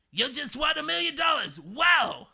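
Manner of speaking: raspy, excited, loud voice swinging high. Retelling how the host announced a winner on the show: Regis raspy excited voice. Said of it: "he would, like, get really raspy".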